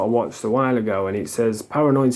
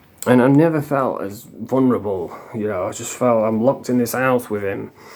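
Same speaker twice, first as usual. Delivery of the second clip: usual speaking voice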